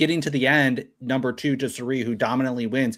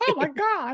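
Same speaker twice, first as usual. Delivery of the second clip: put-on cracking voice, higher. Retelling a moment from a challenge: imitating Jeff's cracking voice. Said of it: "Jeff's voice was cracking".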